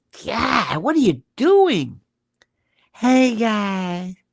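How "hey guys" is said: mocking put-on mousy, giggly voice. Mocking a widow's greeting to viewers: imitating a mousy, giggly voice. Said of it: "mousy, laughing, giggly, rictus".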